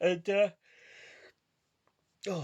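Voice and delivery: high voice, yawning through the words. Talking about playing a game for the first time yesterday, yawning. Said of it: "excuse me for yawning".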